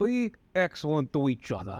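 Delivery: put-on wiseguy Italian mobster accent. Redoing a movie line as Frank with a friend, Frank in Italian mobster accent. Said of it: "let's do it with in Italian mobster accents".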